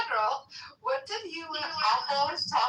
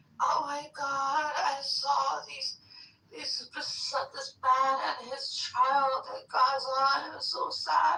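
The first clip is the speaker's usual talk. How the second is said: slow, tearful words through real crying; 4 semitones lower than usual. Retelling what someone in another room said: imitating someone crying. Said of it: "he was crying, like, actually crying".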